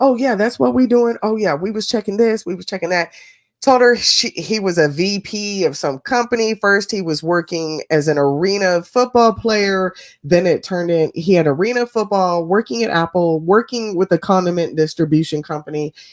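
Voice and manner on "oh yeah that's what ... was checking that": breezy, casual, pitched-up fake small talk chatter. Retelling how he acted like he was on the phone: imitating a man faking a phone call. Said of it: "goes on for twenty more minutes".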